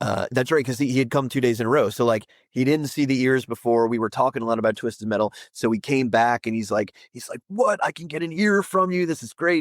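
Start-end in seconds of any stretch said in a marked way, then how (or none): 7.5-9.6 mock thrilled fan, worked up, pitched up. Retelling a fan's reaction to a custom signed ear: imitating an excited fan. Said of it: "So he's all excited".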